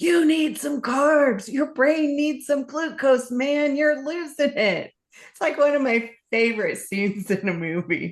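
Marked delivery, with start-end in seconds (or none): 0.0-4.9 acted, urgent high-pitched yelling. Retelling a movie scene where a tied-up man yells at his captor, retelling a yell. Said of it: "he just starts yelling".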